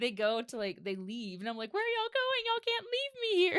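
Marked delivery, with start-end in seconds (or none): 1.7-3.6 mock very high, loud, panicked freaking-out outcry. Speaker recounts being left with a tourniquet on, retelling freaking out. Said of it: "I'm just like freaking out".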